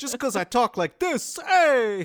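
very high, very loud put-on New York accent. Joking about a character who gets judged for how he talks: put-on new york accent. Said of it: "I'm not really from New York".

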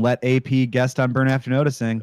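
ordinary talk

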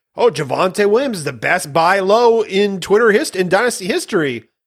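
mock sarcastic tone. Speaker describing a tweet they made, retelling sarcastic tweet. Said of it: "I like sarcastically".

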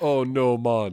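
put-on Jamaican accent. Retelling how a comic line read in the head: put-on jamaican accent. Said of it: "I read it as a Jamaican".

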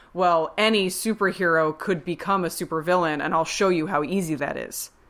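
ordinary talk

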